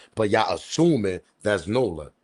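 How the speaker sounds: ordinary talk, nothing marked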